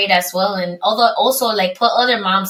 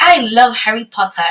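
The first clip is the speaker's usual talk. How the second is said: put-on British accent on the whole line; 3 semitones higher than usual. Retelling what her son said about harry potter: imitating son's british accent. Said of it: "he puts on, like, a British accent".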